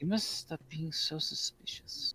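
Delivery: hushed whisper. Asked about not telling Karth, the professor answers in a whisper. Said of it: "whispers this back to you".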